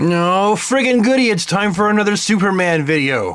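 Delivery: dry, ironic, sarcastic-sounding tone. Opening another Superman video, sounding sarcastic. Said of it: "I realize that sounded sarcastic".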